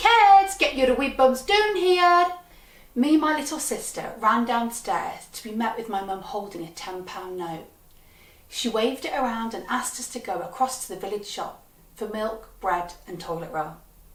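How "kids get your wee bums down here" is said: put-on high, loud shout in a Glaswegian accent. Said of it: "my mum shouted in her Glaswegian accent".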